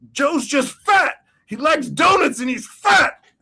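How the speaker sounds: mock shrieking, very high and loud scream. Recalling a backstage bit you love, act out the man in it, imitating someone screaming. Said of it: "And he's just screaming about it".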